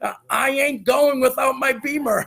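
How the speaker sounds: mock enthusiastic insistence. Retelling a former student's words about her car: imitating enthusiastic insistence. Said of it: "she said it with this enthusiasm".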